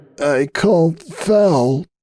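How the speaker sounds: tiny, high croaking voice, foul drawn out. Narrator voicing Hoops' reply to Applejack, small croaking voice. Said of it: "Hoops croaked in a small voice".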